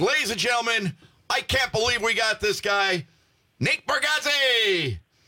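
high, slow, drawn-out announcer voice.

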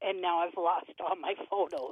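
ordinary talk, nothing marked

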